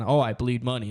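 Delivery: put-on boastful, bragging tone. Showing how the claim would sound if said the wrong way: boastful tone. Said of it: "in a boasting way".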